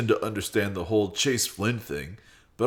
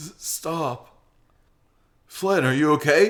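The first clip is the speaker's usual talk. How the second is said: voice breaking with worry, high-pitched, stumbling start; 6 semitones higher, 4 dB louder than usual. Reading a character's worried line to a hurt friend: voice cracking with worry. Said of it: "Carl's voice cracks".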